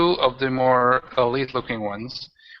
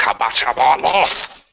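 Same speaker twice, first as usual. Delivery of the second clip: growled, snarling villain voice; 4 dB louder than usual. Voicing a singed floating witch who snarls at a player: snarling witch. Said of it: "she just kind of snarls at you".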